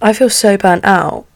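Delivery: ordinary delivery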